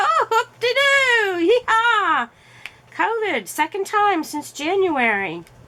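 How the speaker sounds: high, sarcastic cheerfulness. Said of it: "I'm like".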